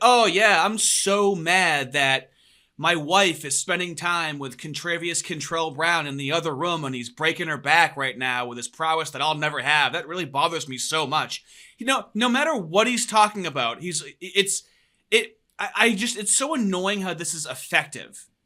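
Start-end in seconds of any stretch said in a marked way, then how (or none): none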